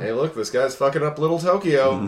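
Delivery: mock bored newscaster, loud and unenthusiastic. Imitating the news anchor from an episode: imitating an unenthusiastic news anchor. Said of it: "the most unenthusiastic, like, news anchor being like".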